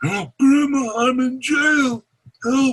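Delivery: very high-pitched, smothered, muffled and unclear. Demonstrating a scam call to a grandparent, in a muffled voice. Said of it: "that voice is very muffled".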